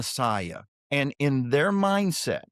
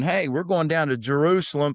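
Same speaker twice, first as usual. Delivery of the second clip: put-on sarcastic, mocking tone. Retelling a Bible passage, voicing the brothers: imitating a sarcastic taunt. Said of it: "Jesus' brothers are sort of being sarcastic".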